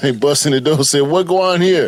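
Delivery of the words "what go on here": high, put-on Jamaican accent. Acting out police bursting in on a man caught with fakes: jamaican accent. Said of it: "for our Jamaican accent".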